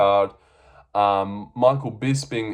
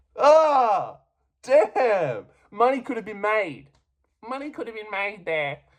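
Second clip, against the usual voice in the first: strange, exaggerated, weird put-on voice, very high; 11 semitones higher than usual. Commentator reacting to a second fight ending the same way, in a weird voice. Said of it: "sorry for going into that weird voice".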